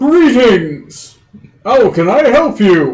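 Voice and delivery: loud, slow, drawn calling-out voice. Voicing a talking door knocker that calls out to visitors: talking door greeting. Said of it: "the door calls out to you and it's like".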